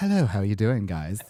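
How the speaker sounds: mellow, soft-spoken, quiet and calm. Imitating how Az talks when spoken to: imitating Az's quiet calm voice. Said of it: "when we actually talk to Az, he's all".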